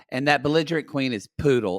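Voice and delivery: ordinary talk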